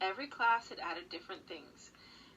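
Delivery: ordinary delivery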